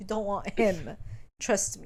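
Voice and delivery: ordinary delivery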